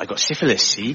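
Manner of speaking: cheerful, put-on West Country accent. Showing how a word sounds in a West Country accent. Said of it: "but in the West Country".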